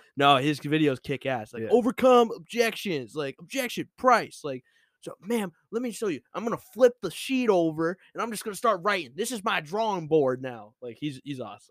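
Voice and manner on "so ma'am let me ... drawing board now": Southern drawl, pitched a touch higher. Praising his car-sales videos, the speaker does Andy Elliott's Southern drawl. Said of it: "He's kind of got like a Southern drawl".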